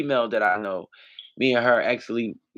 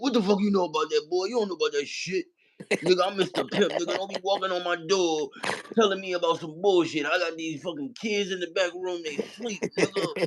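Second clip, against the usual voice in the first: put-on pitched-up old man voice, talking trash; 7 semitones higher than usual. Showing how he can talk like an old man: old man voice. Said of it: "I know how to talk like an old man".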